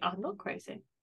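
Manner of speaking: really quiet, soft, calm, even, composed delivery. Describing an imagined reply, said really quietly and calmly. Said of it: "really quietly and really calmly".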